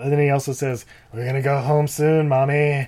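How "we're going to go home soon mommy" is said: total creeper, creepy-sounding voice. Describing a movie scene, quoting Eddie's line to Diane in a creepy Eddie voice. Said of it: "it may sound like I'm just doing like a total creeper voice".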